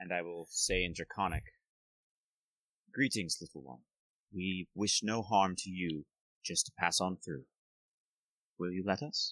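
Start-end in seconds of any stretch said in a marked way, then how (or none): 2.9-9.3 very gentle voice, lower. Speaking in character to a baby dragon, asking to pass: gentlest voice possible. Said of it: "my gentlest voice that I possibly can".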